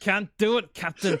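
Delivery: very loud, high-pitched, put-on Scottish brogue. Asked to do their best Scottish accent, the speaker delivers the line in a Scottish accent. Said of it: "do your best Scottish accent".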